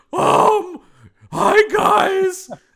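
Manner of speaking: loud, high-pitched, squeaky voice. Describing a tense film scene as he walks in, in a Squeaky-Voiced Teen voice. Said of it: "He really is squeaky voice teen from The Simpsons".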